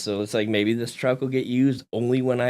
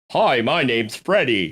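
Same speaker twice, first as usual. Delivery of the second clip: bad fake British accent, slower; 4 dB louder than usual. Hosts trading silly accents on the show, bad fake british accent. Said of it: "I'm done doing accents on the show".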